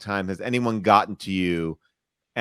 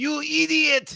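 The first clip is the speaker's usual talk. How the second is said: very high, shrill, scratchy, rough cartoon voice. Giving the classic voice after being asked to: Ren and Stimpy voice. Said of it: "Ren and Stimpy is like".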